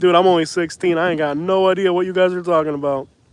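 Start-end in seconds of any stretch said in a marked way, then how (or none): none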